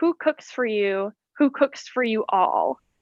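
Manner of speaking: ordinary talk, nothing marked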